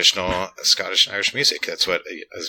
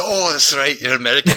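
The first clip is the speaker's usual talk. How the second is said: put-on, pitched-up Glaswegian accent; 8 semitones higher, 5 dB louder than usual. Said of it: "Glasgow is its own unique and crazy when it comes to a Scottish accent".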